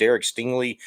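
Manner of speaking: ordinary talk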